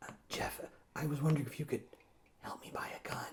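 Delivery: whispered, very quiet, barely audible. Retelling a friend who moved here asking for help buying a gun: imitating someone whispering. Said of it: "You don't have to whisper".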